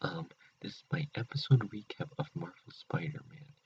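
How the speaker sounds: hushed whisper. Introducing his episode recap while his mom sleeps in the other room, whispering. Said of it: "I has to whisper".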